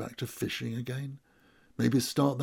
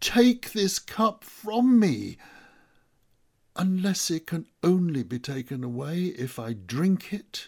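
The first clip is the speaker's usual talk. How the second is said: high, loud, drawn-out near-shriek; 6 semitones higher, 6 dB louder than usual. A narrator reads a man's prayer as the listeners hear it again; almost shrieking. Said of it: "he almost shrieks".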